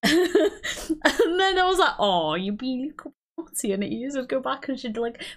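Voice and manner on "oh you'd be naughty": put-on, exaggerated, really strong Welsh accent. Retelling how the speaker talks to their dogs: really welsh accent. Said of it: "I put on like a really Welsh accent".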